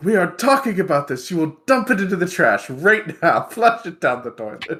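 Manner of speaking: full upset father voice, swooping. Voicing a character chasing a young man home: full upset dad mode. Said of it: "full upset dad mode".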